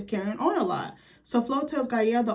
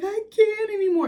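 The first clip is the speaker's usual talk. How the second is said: very high blubbering, tearful boo-hoo sobbing; 11 semitones higher, 4 dB louder than usual. Retelling Flo arriving at the restaurant, imitating Flo crying.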